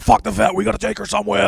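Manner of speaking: frantic, shrill, raspy stressed scream, very high. Retelling a stressed argument with a girlfriend over a sick dog: imitating own screaming. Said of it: "just screaming".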